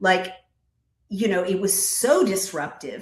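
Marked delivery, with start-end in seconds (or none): none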